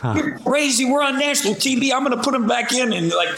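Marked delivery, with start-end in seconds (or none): 0.1-1.9 high-pitched, acted-out yelling voice. Retelling how the coach yelled back at them, imitating a coach yelling. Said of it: "And Coach started yelling at me".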